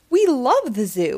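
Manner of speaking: ordinary delivery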